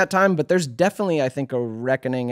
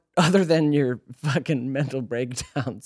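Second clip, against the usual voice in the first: laughing through words while talking. Asking another speaker a question, laughing while talking. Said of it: "sorry, I'm laughing".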